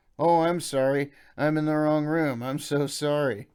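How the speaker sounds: put-on very drunk, slurred, loud and slow. Reading a memoir aloud, an intruder answering in the dark: very drunken voice. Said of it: "In a very drunken voice".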